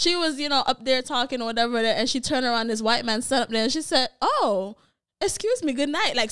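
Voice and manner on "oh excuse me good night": prim, posh proper English, pitched up and slow. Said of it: "switch from patois".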